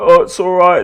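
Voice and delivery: frightened, nervous, high-pitched voice. Retelling a man's reply after trying to open his door by mistake: imitating a scared voice. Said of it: "he sounded really fucking scared".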